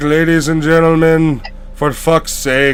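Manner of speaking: bored, flat, dead-level villain-style monotone drone. Quoting a movie villain starting his takeover of a building: mock-bored monotone. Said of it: "His monotone voice always makes me laugh... he's already bored. He's already like".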